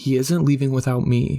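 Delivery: ordinary delivery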